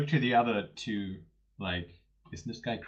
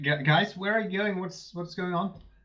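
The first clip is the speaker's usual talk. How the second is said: calling out in raised, high-pitched voice; 7 semitones higher than usual. A player's character calls out to the others as they leave, with a raised voice. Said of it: "I raise my voice".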